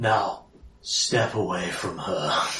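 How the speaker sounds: very low, hushed, quiet, intimidating voice. Tabletop player in character, intimidating a man, in a lowered voice. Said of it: "I will lower my voice and drop it down to him".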